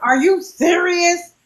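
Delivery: mock furious, high-pitched screaming outburst. Acting out screaming angrily at the phone at home, imitating angry screaming. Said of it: "I'm angry and I'm screaming at the phone like".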